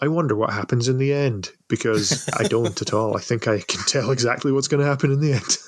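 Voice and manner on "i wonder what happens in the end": sarcastic, feigned curiosity, wondering tone. Speaker talking about a predictable dog-centric rom-com, sarcastically asking. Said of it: "I'm sarcastically asking".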